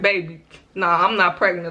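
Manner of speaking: normal talking voice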